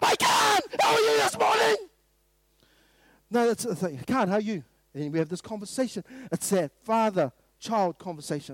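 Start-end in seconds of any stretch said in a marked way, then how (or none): 0.0-1.8 loud shouting voice. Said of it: "I don't talk to my son like this".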